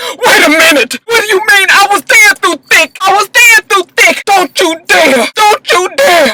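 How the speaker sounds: very high, cracking, breaking, upset voice. Retelling an argument where she got upset: imitating Tahiri's upset, breaking voice. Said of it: "her voice got like this".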